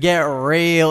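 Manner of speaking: put-on, mock-sarcastic tone. Retelling what an English character says to a wooden boy: retelling a sarcastic remark. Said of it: "in a sarcastic tone".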